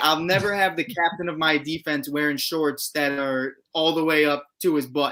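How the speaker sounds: normal talking voice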